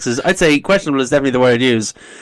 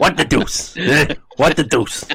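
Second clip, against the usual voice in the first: put-on New York accent. Showing how a New York uncle would quote Family Guy: New York uncle doing Stewie Griffin. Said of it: "my New York uncle doing an impression".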